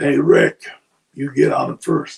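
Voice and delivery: shouted call. Recounting an amateur wrestling bout, the speaker is retelling a yell. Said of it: "So he yells out".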